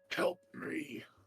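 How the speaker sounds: hushed, under-the-breath mutter through gritted, clenched teeth. Retelling a scene, quoting a man's plea just before he disappears: muttered through gritted teeth. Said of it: "under his breath, under with gritted teeth".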